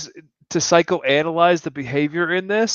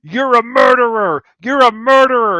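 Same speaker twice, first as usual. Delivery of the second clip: mock, put-on screaming; 5 semitones higher, 5 dB louder than usual. Recounting a fight between two brothers, retelling Adam's scream. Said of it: "Adam is screaming out loud".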